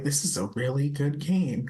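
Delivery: sobbing while talking. Retelling the end of a game: retelling sobbing while talking. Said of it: "I'm in the middle of sobbing".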